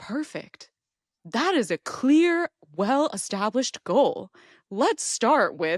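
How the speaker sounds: mock-deadpan, drawn-out, dead-serious chatbot voice. Describing a chatbot as a buff personal trainer, the speaker voices it: mock-deadpan chatbot trainer voice. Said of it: "has this like deadpan expression and then goes".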